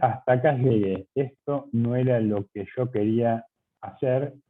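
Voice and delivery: normal talking voice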